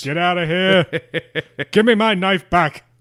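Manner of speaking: high, loud yelling. Riffing after describing catching crawdads and telling stories, the speaker jokes by yelling at children. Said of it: "like you were yelling at children".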